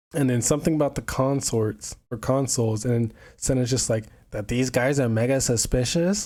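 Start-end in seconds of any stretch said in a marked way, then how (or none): 4.3-6.2 put-on American accent. Retelling a game character's line: imitating Senna's American accent. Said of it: "so American out of everybody".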